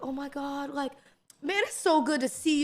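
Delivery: mock sugary-sweet, gushing, overly nice friendly tone. Imitating Mark warmly greeting someone: imitating Mark being overly nice. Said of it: "He's so nice all the time".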